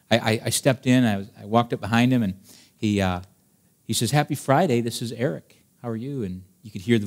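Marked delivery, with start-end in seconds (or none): 4.1-6.2 put-on kind, sincere voice. Retelling a church member's cold call, imitating Eric speaking kindly. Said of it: "he says it very kindly".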